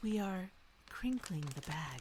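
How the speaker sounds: very hushed, quiet, soft ASMR voice. Host crinkles the chip bag for the episode in an asmr voice. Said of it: "let me put on my A S M R voice".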